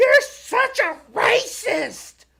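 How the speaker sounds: very high, shrill, top-of-the-lungs yell. Telling how a girl shouted at him while with his son, imitating a girl yelling. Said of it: "this girl on the top of her lungs".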